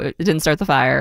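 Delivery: ordinary talk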